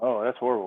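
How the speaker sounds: bone-dry, expressionless deadpan delivery. Reacting to a story another speaker just told: said dryly. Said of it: "that so dryly".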